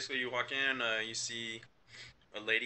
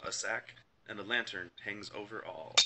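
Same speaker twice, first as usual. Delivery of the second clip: usual speaking voice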